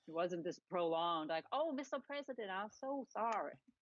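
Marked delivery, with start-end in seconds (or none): 1.5-3.5 put-on, laid-on Southern gentleman accent. Imitating Jeff Sessions apologizing to the President: Southern gentleman accent. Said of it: "I love your Southern gentleman accent".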